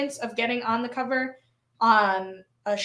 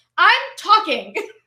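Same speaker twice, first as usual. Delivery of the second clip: mock first grade teacher scolding tone, higher, louder; 6 semitones higher, 6 dB louder than usual. Cutting in on the other speaker: put-on first grade teacher voice. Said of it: "I tried to get a little first grade teacher on you there".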